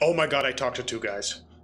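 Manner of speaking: brief frantic panic. Describing a scene where a woman reacts as you leave: brief panic attack. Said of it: "have a brief panic attack too as she goes".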